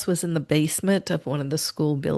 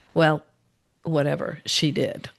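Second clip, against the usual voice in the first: ordinary talk, nothing marked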